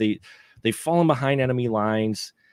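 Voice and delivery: ordinary talk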